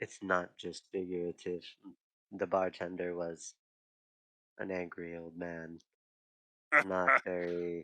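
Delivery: whispering in a put-on voice. Playing a character, whispering an aside to the table: whispering in character. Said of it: "I'm gonna whisper".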